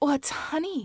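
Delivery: gasping. Narrator reads the first-person character watching through a one-way window, gasped. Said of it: "I gasped".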